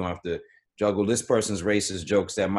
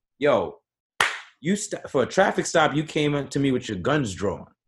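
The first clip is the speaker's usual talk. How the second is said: imitated yelling in a man's voice, much higher; 6 semitones higher than usual. Retelling a video of a man yelling at a cop over a traffic stop, retelling a yell. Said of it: "literally yelling at the cop".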